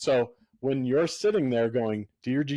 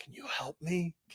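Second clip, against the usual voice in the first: put-on child whisper, higher and quieter; 5 semitones higher, 10 dB quieter than usual. Retelling how a two-year-old asked mom for help at prayer time: imitating a child whispering. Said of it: "whispering to mom".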